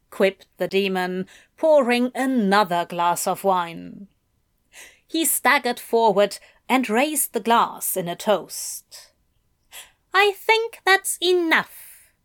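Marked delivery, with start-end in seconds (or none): 10.1-11.9 resolute, firm, very high-pitched voice. As the demon staggers and raises another glass, he says firmly. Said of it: "said Azirafel firmly".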